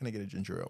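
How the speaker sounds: mock forced calm tone. Retelling asking for a ginger ale at the gas station: imitating own forced calm. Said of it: "as calmly as possible".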